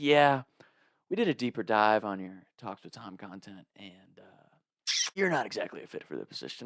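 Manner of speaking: put-on judgmental voice. Speaker retelling a job rejection, voicing the man who turned him down; imitating a judgmental tone. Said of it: "the judgmentalness in his voice".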